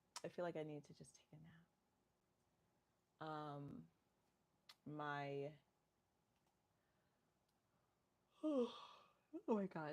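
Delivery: talking through a yawn. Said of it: "for yawning and making y'all yawn too".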